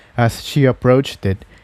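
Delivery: plain reading voice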